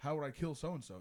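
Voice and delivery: plain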